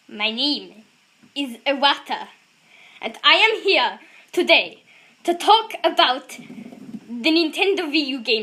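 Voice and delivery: very slow, deliberate presenter delivery, word by word. Taking a turn at impressions of the Nintendo Direct presenter: Iwata impression. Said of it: "this is gonna be embarrassing".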